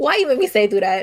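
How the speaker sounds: angry, heated, mad tone. Complaining that the other speaker made them sit through a conversation: angry. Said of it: "I'm so mad".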